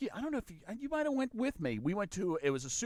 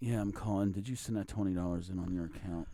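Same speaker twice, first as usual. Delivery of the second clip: put-on hungover voice; 9 semitones lower, 3 dB quieter than usual. Retelling a collections call made while hungover: imitating a hungover caller. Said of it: "I was hungover".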